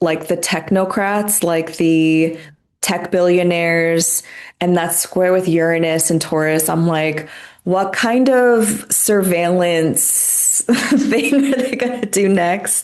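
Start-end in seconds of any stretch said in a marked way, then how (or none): 7.6-12.8 speech broken up by laughter throughout. Wondering aloud what the tech billionaires will do next, laughing while talking. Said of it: "I'm sorry I'm laughing".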